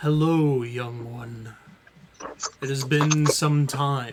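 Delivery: wild beast creature voice. A narrator voices a familiar character's greeting, in a deep voice. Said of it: "a familiar dark, or not dark, deep voice says".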